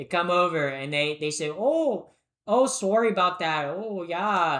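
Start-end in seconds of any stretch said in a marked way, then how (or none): 1.5-4.6 put-on slow Canadian accent. Joking about Canadians crossing the border: imitating Canadians. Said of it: "These Canadians, these Canadians".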